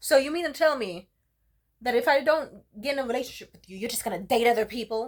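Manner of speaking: loud yell from the top of the lungs. Retelling what a date yelled in a restaurant: imitating him yelling.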